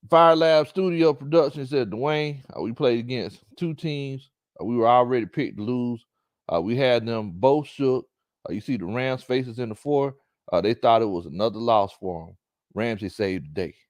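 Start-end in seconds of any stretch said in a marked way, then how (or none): none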